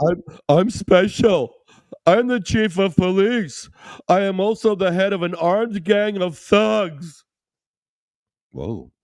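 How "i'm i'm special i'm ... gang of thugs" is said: goofy comic voice, very high, slow, stretched out. Reading out a comment in a silly funny voice. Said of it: "I'll say this in a funny voice".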